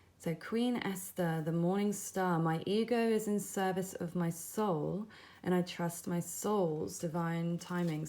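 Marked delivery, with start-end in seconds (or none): 4.3-5.1 stress on the word soul. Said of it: "I put some emphasis on the word soul there".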